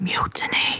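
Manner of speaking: extremely quiet, barely audible voice. Leaning into Rosie's ear to deliver one word, in the quietest voice ever. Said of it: "in the quietest voice ever say".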